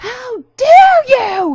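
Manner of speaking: very high, loud, drawn-out scream.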